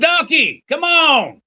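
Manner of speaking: shrill high-pitched yelling. Voicing a character who jumps into the car and yells: yelling. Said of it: "and yells".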